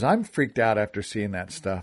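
usual speaking voice

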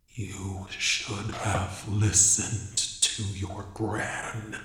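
very low, deep, almost broken voice. Reading a horror story, voicing the caller on the phone: deep, almost broken voice. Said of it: "a deep, almost broken voice said".

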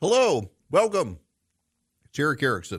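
talking while chewing. Host greets listeners while chewing something, talking while chewing. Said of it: "I put something in my mouth and I'm chewing it".

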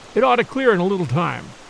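plain reading voice

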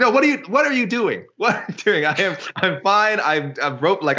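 high, protesting, arguing back. Retelling how the fighter reacted to the stoppage: imitating Cutelaba protesting. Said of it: "Cutelaba, of course, was immediately like".

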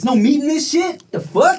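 shouting. Complaining to the other speaker that the food has no meat: yelling. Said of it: "You're yelling at me".

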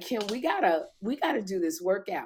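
plain

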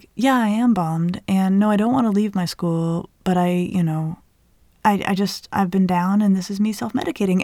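ordinary delivery

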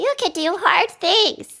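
put-on very high, childlike kid voice. Trying the same encouraging line again in another voice, kid voice. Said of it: "Let me try the kid voice".

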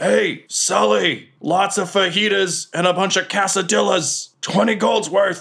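very high-pitched, loud yell. Voicing a character who yells a food order to Sully, yelling an order. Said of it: "And he yells".

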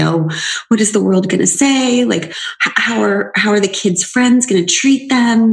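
frightened, fearful, worried voice. Retelling what mom would say on the phone: imitating mom's fearful voice. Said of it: "the fear in her voice".

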